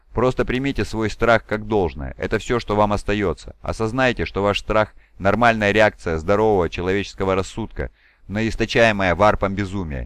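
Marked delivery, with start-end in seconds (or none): none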